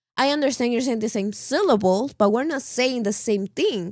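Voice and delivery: ordinary talk, nothing marked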